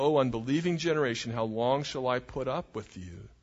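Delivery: ordinary delivery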